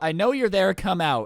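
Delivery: ordinary delivery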